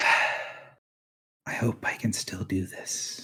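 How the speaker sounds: soft, hushed, breathy whisper under the breath. A narrator voices a woman focusing her power, whispering to herself. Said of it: "she whispers to herself".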